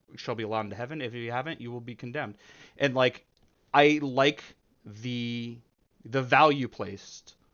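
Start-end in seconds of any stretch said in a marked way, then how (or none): none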